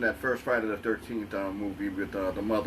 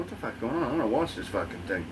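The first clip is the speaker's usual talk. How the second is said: ordinary talk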